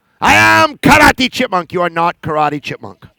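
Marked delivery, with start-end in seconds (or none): 0.2-1.7 loud, announcing puppet-character voice. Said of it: "This is my chipmunk".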